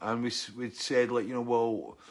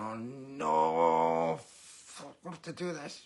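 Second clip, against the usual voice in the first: very slow, reluctant, embarrassed grumble, stretched no. Retelling two men at a gig asked to dance: imitating embarrassed men. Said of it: "getting more and more embarrassed".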